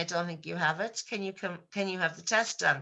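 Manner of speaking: normal talking voice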